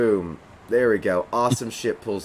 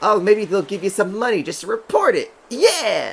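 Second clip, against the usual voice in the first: excited, giddy, tiny voice, very high and swooping; 10 semitones higher than usual. Voicing an excited little companion dancing on a shoulder: excited little character voice. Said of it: "And she gets all excited, does a little dance".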